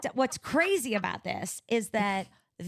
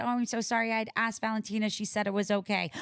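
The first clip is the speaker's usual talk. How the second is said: ordinary delivery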